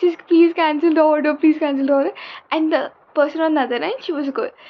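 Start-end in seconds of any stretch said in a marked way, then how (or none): 0.0-2.1 loud, tearful, crying, pleading tone. Retelling a phone call while famished, retelling crying and pleading. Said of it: "And I'm like crying".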